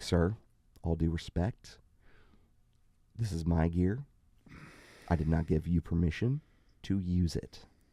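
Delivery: put-on ASMR-style confrontational whisper. Retelling walking up to a man using the speaker's gear, in a retold confrontational asmr whisper. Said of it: "Confrontational A S M R".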